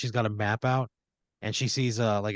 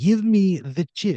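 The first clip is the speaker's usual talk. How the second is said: put-on slow, raised voice with Russian accent; 8 semitones higher, 7 dB louder than usual. Telling a made-up garage story, a stranger demands a chip: Russian voice. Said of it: "you hear a Russian voice go".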